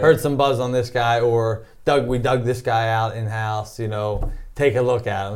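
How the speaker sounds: ordinary talk, nothing marked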